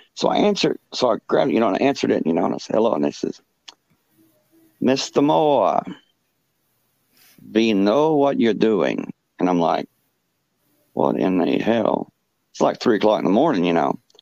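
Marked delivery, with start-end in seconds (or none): 4.9-9.2 put-on heavy, strong German accent. Retelling a 3 a.m. phone call from a stranger, heavy german accent. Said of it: "this person got this German accent, really strong, really heavy German accent".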